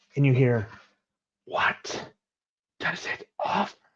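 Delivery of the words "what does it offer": raspy spider whisper, higher and quieter. Describing the voice you hear from Lord of the Rings: whispering raspy Shelob voice. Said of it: "this whispering, raspy, like what you would imagine Shelob".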